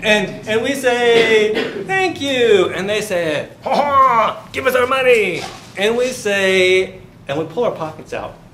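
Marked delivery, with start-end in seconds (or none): 3.6-5.4 put-on French accent, pitched high, wah-wah babble. Retelling the French demanding their money back, in a mock French accent. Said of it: "That's my French accent".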